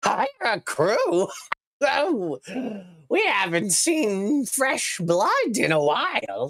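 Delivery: very high, swooping, cartoonish goblin character voice. Narrating, the speaker voices a goblin answering a request to hire a crew: goblin voice. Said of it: "The goblin scrambles up onto the railing and goes".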